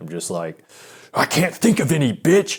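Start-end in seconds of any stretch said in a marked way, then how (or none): 1.1-2.6 put-on nervous scream, high, loud, angry-sounding. Retelling how a repeated line sounded to her: imitating sounding pissed off. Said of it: "it did sound like I was pissed off".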